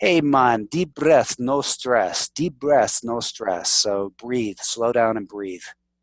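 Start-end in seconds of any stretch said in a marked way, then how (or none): 0.0-3.7 put-on Jamaican accent, easy delivery. Speaker quotes their old scuba diving instructor, in a Jamaican accent. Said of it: "guy with a Jamaican accent".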